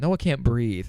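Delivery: put-on casual, nonchalant, offhand tone. Retelling going up to Mom at midnight: retelling a nonchalant remark. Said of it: "we like said it so nonchalantly".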